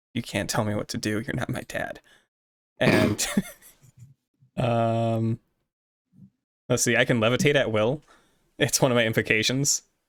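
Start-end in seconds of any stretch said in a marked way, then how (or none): 0.2-2.0 quick, soft mutter under the breath. A player voices Ellie answering him after he runs off: muttered under breath. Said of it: "she just mutters under her breath".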